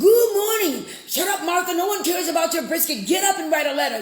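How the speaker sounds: acted-out high, screaming, fast rattled-off yelling rant. Retelling own radio show delivery: imitating own screaming and yelling. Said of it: "I'm screaming and yelling and going on".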